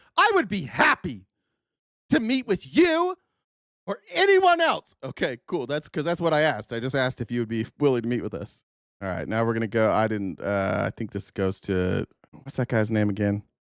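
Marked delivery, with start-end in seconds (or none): 0.2-5.0 put-on shrill, very high, swooping, drawn-out yell. Mocking how she answered a request to meet, retelling her yell. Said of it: "she's got to yell".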